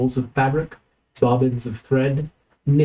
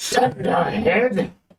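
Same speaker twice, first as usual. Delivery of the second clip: scratchy, high crying out; 6 semitones higher than usual. A narrator voices someone arguing inside a chamber, crying out in a scratchy voice. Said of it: "Cries a scratchy voice".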